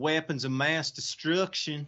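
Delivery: put-on American Southern accent. Saying a requested phrase: Southern George Bush accent. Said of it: "with your very best Southern George Bush accent".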